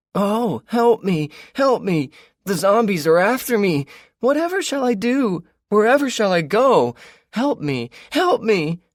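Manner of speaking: very high, shrill, drawn-out falsetto yell. Running into a parking lot for the benefit of companions, yelling in a falsetto. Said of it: "started yelling in a falsetto voice".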